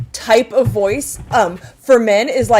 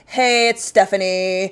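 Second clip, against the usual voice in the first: monotone, deeper, slower voice; 2 semitones lower than usual. Describing callers, the speaker imitates Stephanie's monotone voice. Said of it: "she has just this like monotone, deeper voice".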